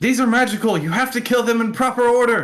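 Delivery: loud, high-pitched yelling.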